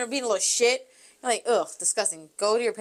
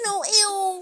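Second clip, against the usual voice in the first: put-on higher babyish voice; 9 semitones higher than usual. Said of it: "I do baby talk, like".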